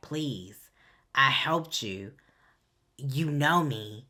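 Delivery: acted, mock desperate begging. Retelling a scene, voicing a woman begging a man not to kill her, acting out desperate begging. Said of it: "begging for her life because she's like".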